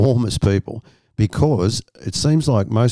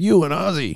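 put-on heavy, laid-on American Southern accent, pitched up; 8 semitones higher than usual. Retelling what a big guy at a bar asked: thick southern accent. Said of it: "Southern accent was so thick".

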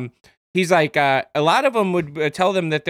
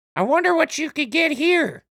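very high-pitched motherly voice; 12 semitones higher than usual. Speaker retells what their mom said after sending something, imitating own mom. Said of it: "Is that your voice for your mom?".

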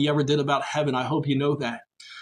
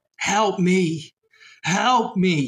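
put-on very slow, drawn-out screaming cry; 4 semitones higher than usual. Retelling voices heard crying for help: imitating people screaming. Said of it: "I remember hearing voices screaming out".

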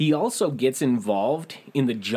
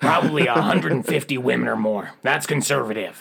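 acted radio announcer voice; 4 dB louder than usual. Performing his boasts about his youth in an Alex Jones voice. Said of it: "I'm going to try an Alex Jones voice".

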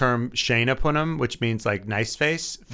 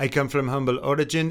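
clumsy, rough, bad put-on French accent. Retelling what Ocon said on the show, bad Ocon French accent. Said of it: "I don't do a good French accent, but like".

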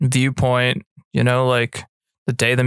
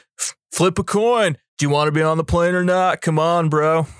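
mock bro voice, higher; 4 semitones higher than usual. Retelling how a film character came across, imitating a bro-ish guy. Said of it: "bro-ish to me".

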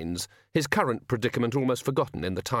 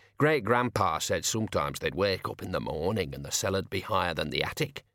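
usual speaking voice

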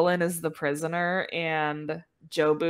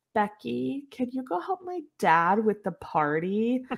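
eerie, unsettling, creepy delivery with pitched-up voice; 5 semitones higher than usual. Retelling a movie character's line: imitating a creepy delivery. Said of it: "she really creepily says".

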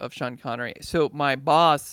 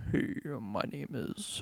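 hushed, very quiet AM radio announcer voice; 10 dB quieter than usual. Asking whether an AM radio host's voice is bassy, then trying it: radio announcer imitation. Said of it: "I'm doing such a poor imitation of it".

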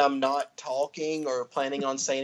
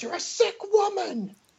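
play-acted very high, drawn-out angry screaming. Retelling a scene where a character screams at her mother: imitating Julie Summers screaming. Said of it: "That's what she was screaming at her".

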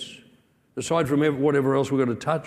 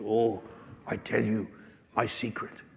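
rough, gravelly, rasping voice; 3 semitones lower, 8 dB quieter than usual. Retelling what he said late one night by lantern: gravelly voice. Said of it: "In a gravelly voice".

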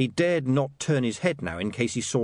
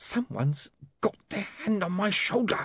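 hissed words with pitched-up voice; 8 semitones higher, 3 dB quieter than usual. Feeling a hand on his shoulder that no one can see, a man hisses. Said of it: "he hissed".

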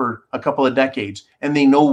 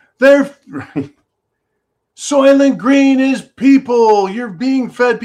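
put-on very high, loud shrieking scream; 11 semitones higher, 5 dB louder than usual. Retelling the movie's lead character finding out the truth: imitating a character screaming. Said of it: "And he screams".

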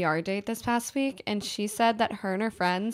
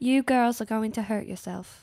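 really bad put-on British accent. Quoting a bellhop warning the girls, in a very terrible British accent. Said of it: "It's a very terrible (laughs) British accent".

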